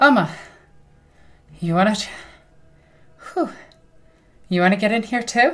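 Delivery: a little winded, puffing. In character after a sword bout, inviting another fighter: slightly out of breath. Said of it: "slightly out of breath".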